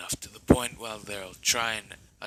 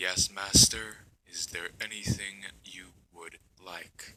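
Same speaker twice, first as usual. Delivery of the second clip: machine-like, mechanical robot voice. Telling a story, the thing squeezing through the doorway answers its master in a mechanical voice. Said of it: "it says in a mechanical voice".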